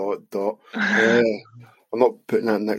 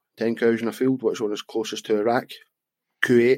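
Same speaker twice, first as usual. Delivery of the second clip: plain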